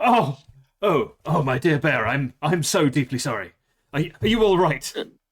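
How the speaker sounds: very English put-on accent. Storyteller voicing a Pegacorn after it hits a bear, very English accent. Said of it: "He's a very English Pegacorn".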